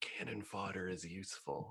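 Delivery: very quiet, half-whispered aside. In character, leaning back to half-whisper an aside to a companion, half-whispering. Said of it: "I lean back to whisper to Kelpie".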